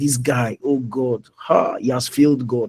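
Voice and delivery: ordinary talk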